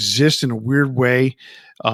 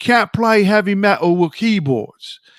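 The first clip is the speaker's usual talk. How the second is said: clumsy, bad British accent, pitched up, laid on; 8 semitones higher than usual. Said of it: "Really bad accents".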